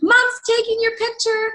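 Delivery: very high, acted-out shouted yell. Retelling how the youngest son called out: imitating someone yelling. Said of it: "he yells".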